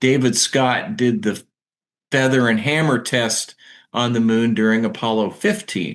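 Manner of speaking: ordinary talk, nothing marked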